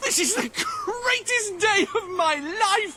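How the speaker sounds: overjoyed shout, laughing.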